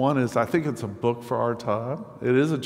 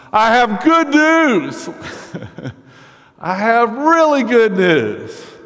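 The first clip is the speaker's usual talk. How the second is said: booming, very loud, very high swooping shout; 11 semitones higher, 10 dB louder than usual. Retelling a young man on a street corner: imitating someone shouting loudly. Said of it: "shouting at the top of his lungs".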